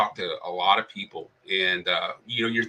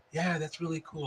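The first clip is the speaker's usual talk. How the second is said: very soft, high, shy, bashful little murmur; 7 semitones higher, 9 dB quieter than usual. Retelling a shy player's answer in conversation: imitating a soft, quiet voice. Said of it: "like a very kind of soft voice".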